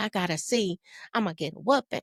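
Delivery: put-on tearful crying voice. Retelling a fourth-grade report card scare: imitating own past crying. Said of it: "What you crying about?".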